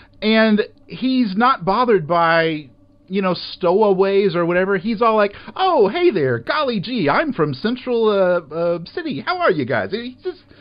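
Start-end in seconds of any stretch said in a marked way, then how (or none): 5.6-9.9 put-on cheery, chipper, swooping sing-song voice. Imitating a cheerful character who wakes up and greets stowaways: imitating a chipper character. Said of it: "He's just so chipper and freaking happy".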